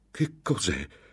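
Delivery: jumpy, startled, stammering in alarm. A man in a dark vault hears a long, low moan; startled stammer. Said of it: "balbettò sobbalzando".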